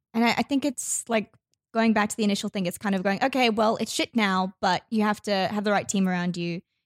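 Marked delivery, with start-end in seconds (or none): none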